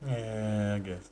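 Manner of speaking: disappointed, let-down, grudging, half-hearted tone. Answering whether a ranking works for everybody, sounding disappointed. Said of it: "He sounds so disappointed".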